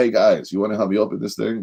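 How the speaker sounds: put-on thick, laid-on heavy New York accent. Speaker quotes a man who walked in with a big present, heavy new york accent. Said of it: "He had this like heavy New York accent".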